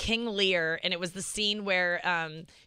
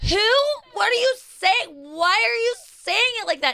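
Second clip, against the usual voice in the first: shrill, very high, loud, baffled, confused yelling; 13 semitones higher, 7 dB louder than usual. Retelling a woman's reaction to a drunk man, imitating her asking really loud. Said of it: "Like really loud".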